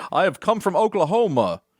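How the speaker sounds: terrible put-on American accent. Mocking the CIA agents in early episodes of Spooks, with a Spooks bad American accent. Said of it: "they do some bad American accents".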